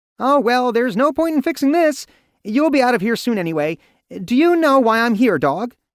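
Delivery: tiny, squeaky, very high and loud voice. Reading the Rat King's three heads speaking together, tiny Rat King voices. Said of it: "in tiny voices".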